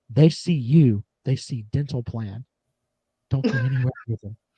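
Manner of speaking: hushed, close stage half-whisper. Retelling a warning half-whispered at a cafe over coffee: imitating someone half-whispering. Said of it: "he whispers to me at the coffee".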